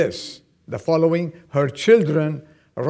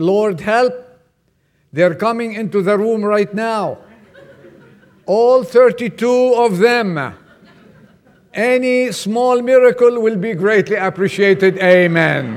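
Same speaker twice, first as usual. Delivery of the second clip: put-on loud, high screaming with "amen" stretched out; 5 semitones higher, 5 dB louder than usual. Retelling a prayer that suddenly changes partway: imitating someone screaming. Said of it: "and then she started screaming".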